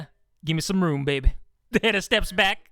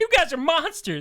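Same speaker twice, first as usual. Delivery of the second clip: play-acted high accusing yell; 9 semitones higher than usual. Retelling how Hannah yells at her: imitating Hannah yelling. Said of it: "Hannah's yelling at her like".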